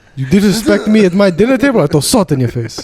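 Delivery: put-on old Jordanian man voice. Joking about being pressed on a podcast, speaker does an old Jordanian man voice. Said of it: "Sound like some old Jordanian man would say".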